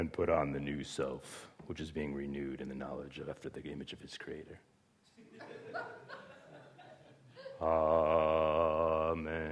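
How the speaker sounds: deep, low, soft, hushed, lifeless droning monotone. Showing how people usually read scripture aloud: flat monotone. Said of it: "like this monotone".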